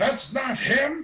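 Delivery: very high, piercing, distant shout from below. Voicing a blue-robed man yelling from below a hatch: yelling. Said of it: "blue-robed man yell out".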